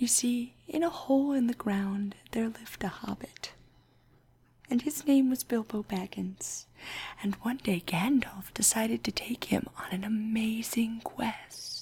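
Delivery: ASMR-style soft whispered narration. A podcast host recounting a story for listeners in ASMR style: ASMR-style soft whisper. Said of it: "entirely in the style of ASMR".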